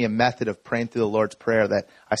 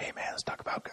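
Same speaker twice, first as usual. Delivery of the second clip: soft, unvoiced whisper. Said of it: "whisper it".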